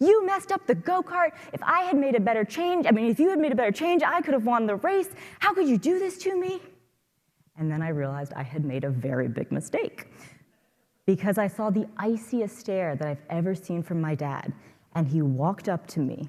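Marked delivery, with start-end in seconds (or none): 0.0-6.6 put-on very high, shrill, play-acted enraged kid's scream. Retelling screaming at their dad after a go-kart race, retelling a scream. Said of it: "and I screamed".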